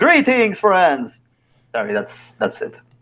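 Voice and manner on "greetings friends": theatrical, dramatic, very high voice. Given a second chance to do a dramatic intro, dramatic greeting voice. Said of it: "He almost sounds like Dracula".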